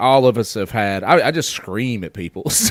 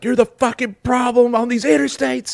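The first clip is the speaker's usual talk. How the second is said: screaming, higher; 14 semitones higher than usual. Retelling screaming at other drivers on the interstate: imitating screaming at drivers. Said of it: "I scream shit like".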